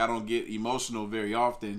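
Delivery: ordinary talk, nothing marked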